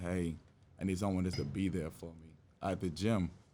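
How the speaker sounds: plain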